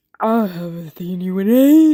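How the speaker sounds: loud, drawn-out cartoon cat voice. Speaker shows off a voice they can still do, cat voice from Open Season. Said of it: "do the voice from Open Season. You know that cat who's like".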